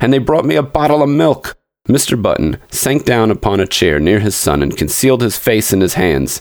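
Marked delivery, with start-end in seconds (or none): 0.0-1.6 shrill, high, complaining note. Reading the old man's complaint about his treatment, shrill protest. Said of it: "his voice rose to a shrill note of protest".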